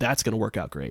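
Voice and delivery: ordinary talk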